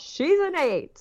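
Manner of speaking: very high-pitched screamed cry. Retelling a doctor calling out a cervical check result: imitating someone screaming. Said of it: "he just screams out".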